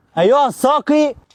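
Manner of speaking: loud voice. Calling out to the waiter in a skit: raised voice. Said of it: "تعالى صوتك ليه؟".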